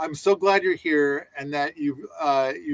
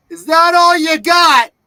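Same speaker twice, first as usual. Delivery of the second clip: high, loud, taunting yell. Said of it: "you will yell out the window".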